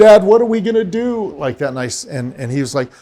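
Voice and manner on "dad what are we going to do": very high, loud, sobbing crying scream. A father retells what his son kept screaming to him; imitating a son's crying scream. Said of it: "in a crying scream".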